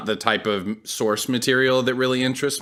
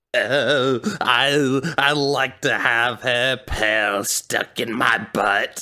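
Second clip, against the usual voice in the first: put-on troll voice with the word "I" drawn out. Mid-conversation, the speaker slips into a troll voice. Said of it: "Your troll voice is so good".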